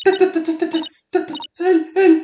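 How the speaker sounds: panicked stammer, stuck on the first sound. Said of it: "Cálmate, Jinxie".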